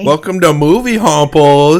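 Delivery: put-on high little boy voice. Opening the show Movie Homples: little boy voice. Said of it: "what is that voice?".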